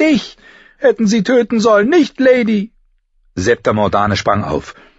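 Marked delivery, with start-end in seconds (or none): 0.0-2.7 shouting, much higher and louder. Her silk dress ruined by the fruit, a girl turns on her sister, shouting. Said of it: "schrie sie ihre Schwester an".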